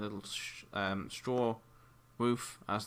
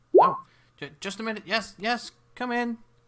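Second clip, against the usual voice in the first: put-on very high, very loud, shrill elderly woman voice; 14 semitones higher, 10 dB louder than usual. Voicing an old woman answering a knock on the door: old woman voice. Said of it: "you hear an old woman".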